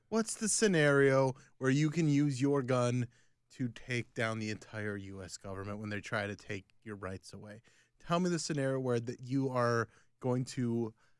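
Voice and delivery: ordinary delivery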